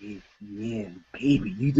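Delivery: very low, seductive, sexy half-whisper. Retelling what a guy at an event said: imitating a sexy half-whisper. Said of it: "whispering sexy talk".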